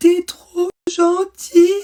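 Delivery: very high, very loud, choked, suffocating sob. Retelling what her crying child said, imitating a child gasping while sobbing. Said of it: "il me dit en suffoquant".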